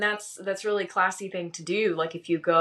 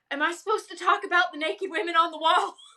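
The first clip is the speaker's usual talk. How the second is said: mock very high, flustered, upset delivery; 12 semitones higher than usual. Retelling how someone reacted to art on the wall: imitating someone upset. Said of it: "upset because he was like".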